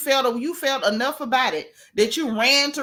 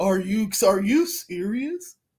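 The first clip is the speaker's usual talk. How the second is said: mock old man voice, lower; 4 semitones lower than usual. Retelling how a girl craned her neck and stooped, mock old man voice. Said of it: "try to talk like an old man".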